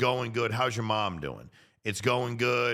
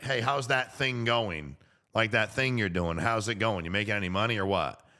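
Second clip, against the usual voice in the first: plain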